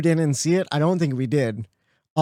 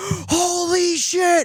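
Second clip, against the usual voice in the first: put-on very high, shocked, shrieking scream; 13 semitones higher than usual. Retelling a reaction to a race finish: retelling own screaming. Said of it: "I'm just screaming like".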